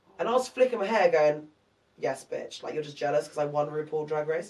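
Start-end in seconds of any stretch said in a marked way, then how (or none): none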